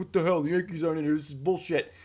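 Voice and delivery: terrible, bad, outraged, angry ranting voice. Imitating a fan complaining the team was left out: terrible Yankee fan impersonation. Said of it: "that was a terrible impersonation of a Yankee fan".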